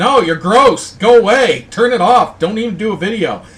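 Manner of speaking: loud, high-pitched disgusted rant. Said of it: "And it's like".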